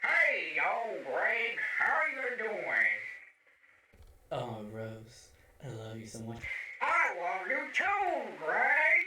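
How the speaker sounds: high, swooping, stuck-in-water fish voice. Speaker tries out a new voice for the others, like a fish stuck in water. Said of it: "like a fish stuck in the water".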